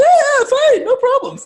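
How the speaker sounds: very high, piping, shrill falsetto. Acting out someone's reply when asked if they're all right, imitating a high-pitched voice. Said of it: "it sounded really high pitched".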